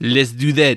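put-on, poor French accent. Talking about a newer band thought to be French, proposing a plan in a bad French accent. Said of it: "That's a bad French accent".

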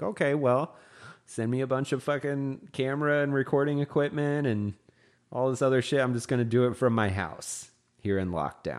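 usual speaking voice

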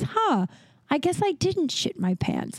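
bewildered, wondering tone. Retelling what a man said after standing and patting himself: retelling a confused remark. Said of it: "confusingly says".

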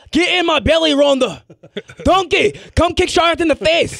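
put-on Scottish shout. Imagining a wrestler coming back and shouting: shouting in Fat Bastard voice. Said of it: "she just shouts".

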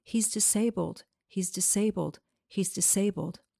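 plain

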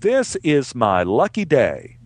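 very slow, laughing through the words. Retelling a story about a patient arriving at the emergency room: imitating someone laughing while talking. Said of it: "came into the emergency room laughing, saying".

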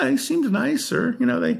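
voice up an octave.

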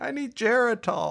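put-on grumbling, complaining old man voice.

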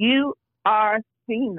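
severe, no-nonsense voice. Retelling what a woman said to her during a conversation, mock-stern. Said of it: "She said that in a very stern voice".

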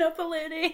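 put-on, very high-pitched, loud kid's yell. Retelling what the kids yelled at the end: imitating kids yelling. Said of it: "yelled that at the end".

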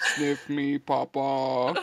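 put-on big, looming giant voice. Imagining a giant looking down at someone: put-on giant voice. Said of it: "a giant looking down at you and being like".

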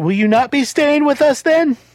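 very high, loud, rising shout. A narrator voices a woman calling after someone leaving, yelling down the stairs. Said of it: "She yells down the stairs".

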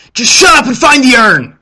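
very loud, very high, shrill bickering yell. A narrator voices someone in the middle of a fight, loud squabbling. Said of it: "loud squabbling, and someone says".

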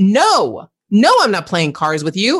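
acted sharp, snappish tone. A mother recalls refusing her son while unwell, acting out snapping at him. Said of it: "I snapped at him and went".

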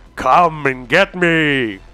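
echoing voice. Narrating a scene, voicing a voice the listeners hear: echoey voice. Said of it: "you just hear an echoey voice".

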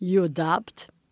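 horrible put-on Eastern European accent. Retelling a stranger's question about the girl with them, in a bad Eastern European accent. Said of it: "I'm gonna do a horrible accent. She's like Eastern European".

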